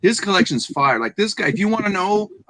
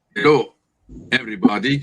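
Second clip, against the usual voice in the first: put-on Russian accent, much lower pitch; 7 semitones lower than usual. Repeating a woman's greeting to everybody, in a russian accent. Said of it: "She says with a Russian accent".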